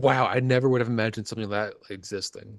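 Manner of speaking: ordinary delivery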